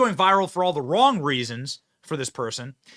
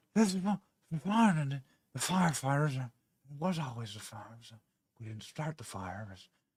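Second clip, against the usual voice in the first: bad put-on rambling old man voice, lower, quieter; 5 semitones lower, 11 dB quieter than usual. Trying a step-by-step impression with the mouth drooping open, very poor Joe Biden impression. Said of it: "I have a very poor Joe Biden impression".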